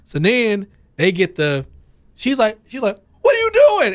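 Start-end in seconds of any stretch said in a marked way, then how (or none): 3.2-3.9 piercing, shrill, high-pitched loud holler. Retelling how a woman on the bar yelled at girls: imitating someone yelling. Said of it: "so she's yelling at the girls".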